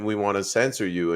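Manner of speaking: plain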